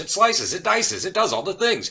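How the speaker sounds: fast, high infomercial pitchman delivery. Voicing a commercial with a forties feel, channeling the ShamWow guy. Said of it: "I'm trying to channel the Sham Wow guy or Ginsu knives".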